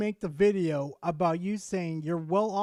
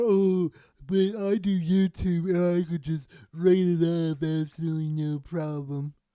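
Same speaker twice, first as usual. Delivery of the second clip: mock slow, offhand, dismissive drawl. Quoting what the other speaker said in their video, imitating a dismissive tone. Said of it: "you sounded very dismissive towards them".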